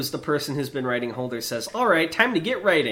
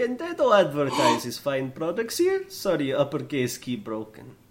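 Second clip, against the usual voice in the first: fake Slavic accent drifting toward Indian accent. Reading a chat message from Dado aloud on a podcast: Dado's put-on Slavic accent. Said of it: "Why do you do an Indian accent?".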